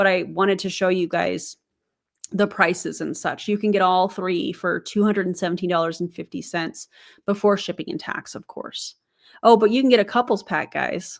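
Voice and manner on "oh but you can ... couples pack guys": mocking, sarcastic delivery. Pointing out a couples pack after listing the prices: sarcastic tone. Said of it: "that is sarcasm".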